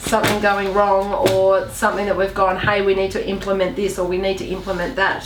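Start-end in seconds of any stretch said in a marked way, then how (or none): none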